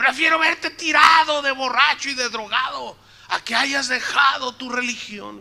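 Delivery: high-pitched, loud, furious shouting.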